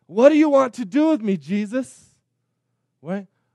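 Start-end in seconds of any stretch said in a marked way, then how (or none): 0.2-2.1 high, pleading, imploring, begging voice. Speaker retelling the demoniac's words to Jesus, acting out begging. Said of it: "he begins begging Jesus".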